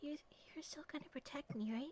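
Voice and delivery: soft in-character whisper. Voicing a character who whispers to the player, asking for protection: whispering in character. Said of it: "she kinda whispers to you for a second".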